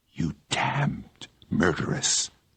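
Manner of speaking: very slow, dragged out between clenched teeth. A man stares at the girl and speaks to her very slowly through gritted teeth. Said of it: "He said very slowly between his teeth".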